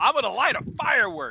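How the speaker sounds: wild, high, loud shrieking scream. Retelling a funny comparison about someone lighting a firework: imitating someone screaming. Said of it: "this dude was just screaming".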